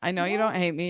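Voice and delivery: ordinary delivery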